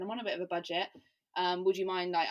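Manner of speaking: plain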